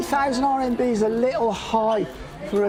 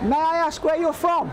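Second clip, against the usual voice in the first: high, pitched-up half-yell; 5 semitones higher than usual. Asking a person next to him where they are from: yelling. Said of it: "Why are you yelling at him?".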